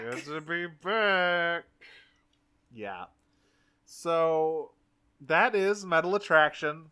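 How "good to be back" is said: put-on voice through clenched teeth, higher. Retelling a scene from an episode, voicing Arachnid's reply: Arachnid through clenched teeth. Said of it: "through clenched teeth".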